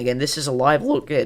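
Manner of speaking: voice breaking and cracking partway through. Speaker introducing a live look at a storm, voice cracking. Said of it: "that was a horrible voice crack again".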